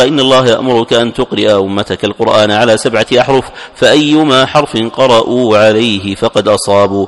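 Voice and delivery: ordinary talk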